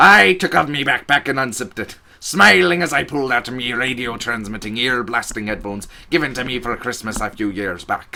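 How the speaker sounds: put-on pirate-style voice. Reading the rest of a story aloud in a put-on pirate voice. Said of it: "I want to sort of do it, the rest of it in that voice".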